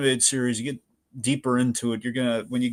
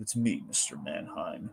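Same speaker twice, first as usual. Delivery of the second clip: put-on voice spoken with a smile; 6 semitones lower, 11 dB quieter than usual. Quoting a favourite villain line from the episode: imitating Darkseid speaking with a smile. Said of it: "he says with a smile".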